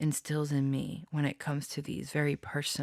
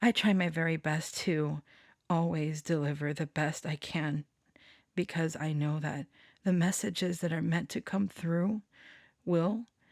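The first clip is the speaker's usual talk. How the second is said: choked-up voice catching, close to crying; 2 semitones higher than usual. Speaking to listeners about their readings, about to cry. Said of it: "I'm gonna cry".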